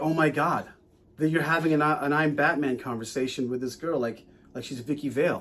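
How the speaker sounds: ordinary talk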